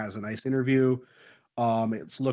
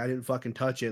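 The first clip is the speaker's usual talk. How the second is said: put-on angry man voice. Retelling a movie scene where the man snaps back: imitating an angry man. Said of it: "he's kind of, like, pissed at her".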